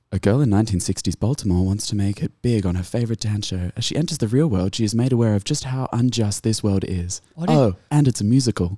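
sultry, seductive voice. Reading a movie synopsis aloud to the others: sultry voice. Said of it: "Why do you have to sound so sultry?".

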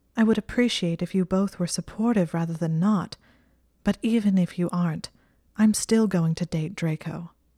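ordinary delivery, nothing marked

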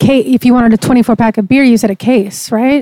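usual speaking voice

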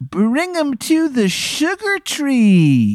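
very high, swooping sing-song, stretched "tree". Voicing a character heard telling the player to rescue someone: Chet Lightning voice. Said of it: "I'm Chet Lightning".

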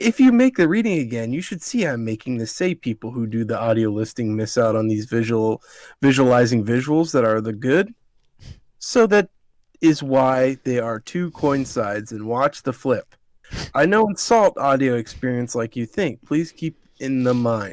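normal talking voice

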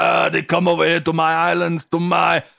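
furious, rough, creaky, gruff voice. Voicing a furious tour bus driver who smokes cigars: angry tour bus driver voice. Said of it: "I don't know what voice this is".

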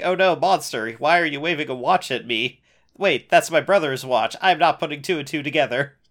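ordinary talk

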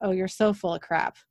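plain

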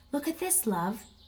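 quietly, softly spoken, hushed voice. Daddy crouches down and points something out to his child, in a soft voice. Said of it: "In a soft voice".

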